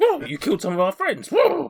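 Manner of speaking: bizarre horse voice, very high and swooping. Voicing a horse answering the players: bizarre horse voice. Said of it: "this horse has got such a bizarre voice".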